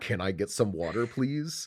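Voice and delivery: mocking, put-on rude tone. Retelling a movie scene, a character shaking his glass: imitating a rude demand for water. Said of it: "shaking his water glass at [name] going".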